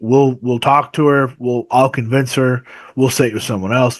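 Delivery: ordinary talk, nothing marked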